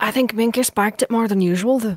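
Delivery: conspiratorial, hushed, secretive stage whisper. Retelling how she leans in, hand before mouth: imitating someone half-whispering a secret. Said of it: "as if she's whispering any great secret to you and go".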